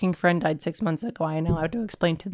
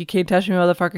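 ordinary talk, nothing marked

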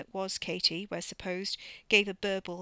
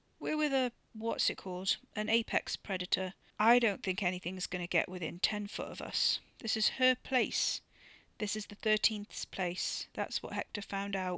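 usual speaking voice

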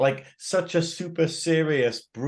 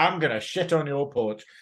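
normal talking voice

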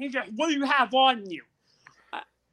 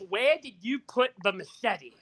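acted-out blunt, accusing, demanding tone; 2 semitones lower than usual. Retelling what a police officer said to you, retelling a very loud voice. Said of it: "says to me in a very loud voice".

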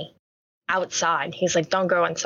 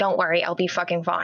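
put-on agitated voice. Retelling an agitated reply to a friend's warning: retelling own agitated reply. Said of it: "I'm getting agitated".

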